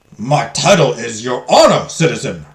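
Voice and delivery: stern, growling, reprimanding tone. Narrator reading the judge's reply to Johanna after her outburst: growling. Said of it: "the judge growls at Johanna".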